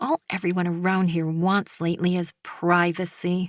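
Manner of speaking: plain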